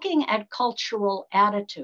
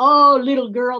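very loud, condescending put-on Southern accent; 3 semitones higher, 10 dB louder than usual. Retelling how aa people at meetings used to talk to you, imitating a southern accent. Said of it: "they usually had a Southern accent".

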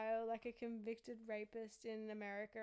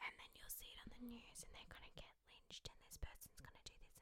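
barely voiced, very quiet breathy whisper; 13 dB quieter than usual. Retelling what she said to the speaker: imitating someone whispering. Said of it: "and she whispers".

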